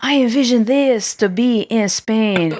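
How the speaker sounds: put-on French accent, very slow, deliberate pace. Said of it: "saying in his French accent".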